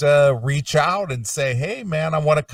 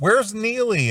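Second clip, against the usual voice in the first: put-on, high, calling-out yell; 7 semitones higher than usual. Retelling how Vinny called out in the meet and greet room: imitating Vinny yelling. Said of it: "yelling out".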